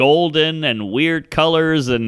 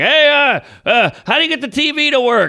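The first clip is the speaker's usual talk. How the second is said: mock yelling at much higher pitch; 9 semitones higher than usual. Retelling a woman on a flight yelling at an old man, retelling a yell. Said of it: "she's yelling at old man Reggie".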